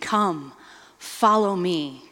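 mock alluring, heartfelt, passionate and loving voice. Speaker imagining how Jesus calls people, acting out Jesus's passionate call. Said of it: "in such a passionate way".

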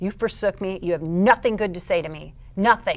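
acted-out, furious, venting, lashing-out outburst. Recounting telling the Lord to shut up: retelling being so mad. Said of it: "I am so mad".

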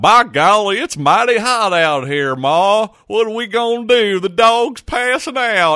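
very high, over-the-top, exaggerated rural Southern accent. Joking about the Missouri heat, exaggerated rural Southern accent. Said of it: "I just sounded like the biggest redneck of all time. ... enough with that stupid voice".

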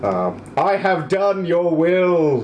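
slow, resounding, echoing voice. Narrating the listener's own voice heard above the city: echoing voice from the sky. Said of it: "in your own echoing voice above the city".

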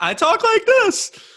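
very high, loud voice. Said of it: "I go up high".

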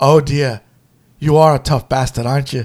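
mock-sarcastic tone. Retelling a loved movie scene, the speaker acts out a character's line: retelling a sarcastic remark. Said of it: "because he was being sarcastic".

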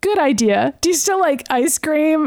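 normal talking voice

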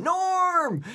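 very high, loud cheering shout.

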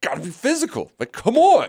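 very high-pitched, spoken through gritted teeth. Retelling a player's answer about being more physical: imitating Weaver through gritted teeth. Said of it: "kinda grits his teeth and is like".

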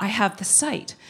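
confiding, hushed stage whisper. Retelling what a woman said while grabbing the speaker's shoulders: imitating someone whispering. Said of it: "grabbed my shoulders and whispered".

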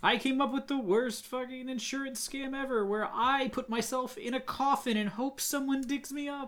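very high, ghostly spooky voice. Playing a ghost in a bit with others, in a ghost voice. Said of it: "I don't know why you're doing the voice".

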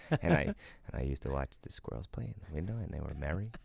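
mumbling under his breath. Speaker quotes a favourite Office Space line: Milton mumbling under breath. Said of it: "he just mumbles that under his breath".

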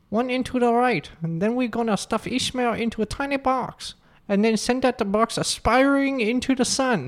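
put-on high caricatured Chinese accent. Reading a written story aloud with a stereotypical Chinese accent.

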